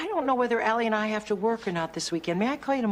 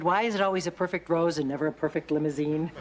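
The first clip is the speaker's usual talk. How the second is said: plain reading voice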